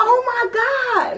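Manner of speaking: very high-pitched screamed exclamation. Retelling a car crash, finding a passenger lying still: retelling a scream. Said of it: "and I scream".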